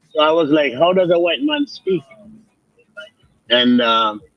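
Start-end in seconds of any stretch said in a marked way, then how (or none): none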